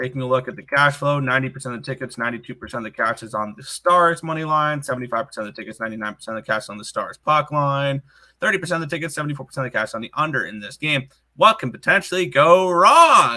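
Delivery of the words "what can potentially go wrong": very loud, swooping, sarcastic tone. Reviewing the betting cash flow on a Stars hockey game, sarcastic. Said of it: "I say sarcastically".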